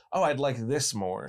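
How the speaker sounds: ordinary delivery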